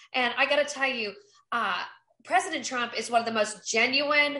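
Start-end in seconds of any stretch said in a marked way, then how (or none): none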